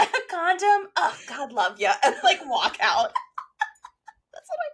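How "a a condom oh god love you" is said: high, doting hostess voice. Speakers picturing an ex walking in offering drinks: the mom from Mean Girls impression. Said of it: "coming in like the mom from Mean Girls".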